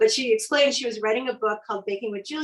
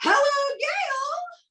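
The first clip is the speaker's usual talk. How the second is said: sky-high falsetto voice. Retelling a phone call from Julia Child: falsetto Julia Child voice.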